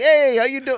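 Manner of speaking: high, loud Italian accent. Describing how her accent changes around Italians: Italian accent kicking in. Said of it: "My Italian accent like kicks in".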